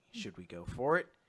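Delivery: soft, hushed half-whisper. Retelling a scene from a story, a character half-whispers: imitating a half-whisper.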